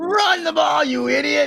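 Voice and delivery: put-on very high, shrill screaming. Joking about diehard fans at the television, imitating a fan screaming. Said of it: "they're the ones screaming at the television".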